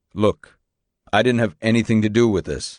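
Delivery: ordinary delivery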